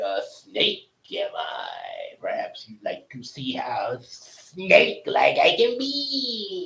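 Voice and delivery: low, swooping, very slow, stretched-out "be". Recalling the Aladdin scene where Jafar becomes a snake: Jafar impression. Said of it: "the scene when Jafar became a snake".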